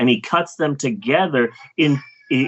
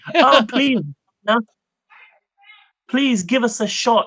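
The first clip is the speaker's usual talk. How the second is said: very high-pitched, put-on British accent; 9 semitones higher than usual. Unable to do a New Zealand accent, act out him asking Marvel in a put-on British accent. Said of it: "so I'm just doing British".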